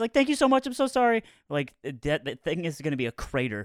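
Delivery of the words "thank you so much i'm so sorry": put-on rushed, very high voice with a thick Mexican accent. Retelling someone apologizing for a long wait: hurried thick Mexican accent. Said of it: "in the most hurried, like thick Mexican accent".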